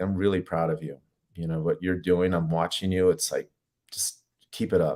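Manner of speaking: mock quiet, soft whisper. Acting out what they whisper to people they know well, quiet whisper. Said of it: "just kind of whisper quietly".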